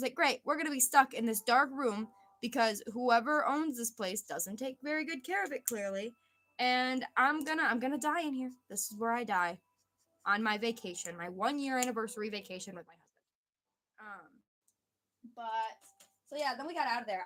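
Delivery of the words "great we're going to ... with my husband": ordinary talk, nothing marked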